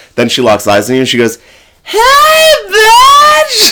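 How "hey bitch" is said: very high, shrill, loud shout, "bitch" drawn out. Doing an impression of Ducky spotting someone in a bar: Ducky impression. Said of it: "let me do my impression of Ducky".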